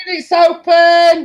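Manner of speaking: high, loud, slow, drawn-out shout. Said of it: "and I'm shouting".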